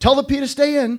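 put-on nervous call. Narrator, buckling Marty into his seat, calls out nervously to him. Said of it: "I called out nervously".

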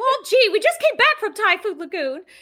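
very high, bouncy, swooping, sing-song cartoon voice. Retelling what Mickey said on the trip, in Mickey Mouse voice. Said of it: "Let me do my Mickey voice".

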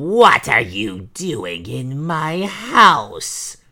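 thunderous, booming, very slow, drawn-out ogress-witch roar. Narrator voices the ogress witch finding strangers in her house: thundering ogress cry. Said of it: "belonged to an ogress, and worse than that, the ogress was a powerful witch. / belonged to an ogress, and worse than that, the ogress was a powerful witch. / cried she, / were they set free than a voi".

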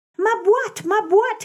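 very high, eager, glad exclaiming voice. She sees her box on the dining-room table and runs toward it; exclaiming. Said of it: "exclaimed she, running towards it".

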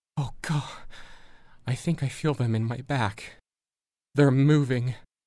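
sudden gasp. Reading a story, voicing a character as she suddenly gasps and tenses. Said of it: "With a sudden gasp, Sparks tenses and arches her back, her eyes growing wide".

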